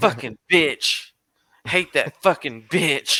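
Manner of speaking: angry ranting voice. Retelling a ten-year-old nephew cussing in the car: imitating an angry rant. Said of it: "He's pissed".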